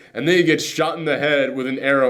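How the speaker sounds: plain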